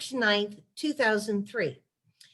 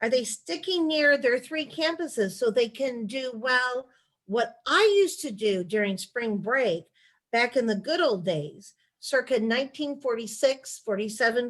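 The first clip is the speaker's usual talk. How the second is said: ordinary talk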